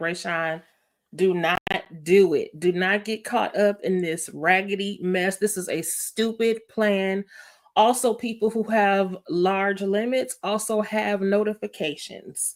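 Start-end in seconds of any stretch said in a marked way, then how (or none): none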